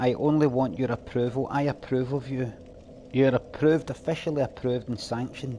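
plain

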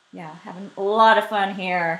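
heavy sarcasm. Makeup tutorial host struggling with a lash curler, sarcastic. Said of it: "That was sarcasm".

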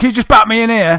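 mock cocky bravado, very high and loud. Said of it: "in a sort of bravado way".

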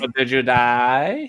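very slow, with "die" drawn out and stressed. Repeating the movie line in a Hangover actor impression. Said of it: "I'm doing an impression of the particular actor".

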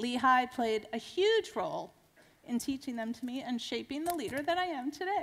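choked-up, tearful, holding back tears. Speaker closing a talk about lessons from their life, choking up. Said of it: "And I'm choking up".

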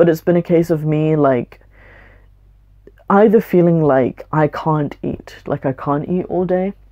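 tearful, fighting back tears, on the verge of crying. Talking about stress that has been adding up, close to tears. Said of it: "I don't wanna cry. Please don't cry".

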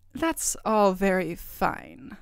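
distrustful, doubtful, very slow delivery with swooping pitch. Narrator reading the queen's reply, suspicious. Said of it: "said the queen suspiciously".

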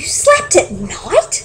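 gasped, gasping. A bat in the crowd reacts to Stellaluna's story: gasping. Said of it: "gasped another".

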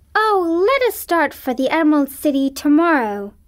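crying out, exclaimed. Reading the girl's next words to her companions, exclaiming. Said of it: "cried Dorothy, clapping her hands".

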